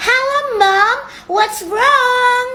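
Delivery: high, loud put-on English, like a foreigner. A kid takes her mom's phone call during a game with friends: pretending to sound like a Westerner. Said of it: "Pura-pura ngomong bahasa Inggris ah sama mama supaya aku jadi kayak bule".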